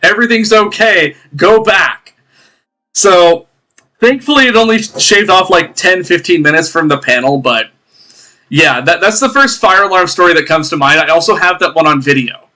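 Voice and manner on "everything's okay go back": mock calming call, slow and steady. Retelling a convention fire alarm, retelling own shout to the crowd. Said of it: "I'm starting to shout".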